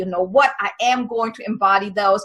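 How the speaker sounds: ordinary talk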